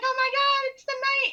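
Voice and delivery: play-acted very high, loud, giddy shriek of delight. Retelling seeing a knight come out while jumping up and down: imitating own excited screaming. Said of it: "the only one screaming and jumping".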